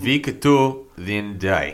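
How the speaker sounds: strong put-on Russian accent. Asked by a co-host for it, the speaker repeats the line in the Sergey voice. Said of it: "can I get that in the Sergey voice?".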